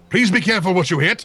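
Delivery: put-on British accent. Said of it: "he chitters in a British accent".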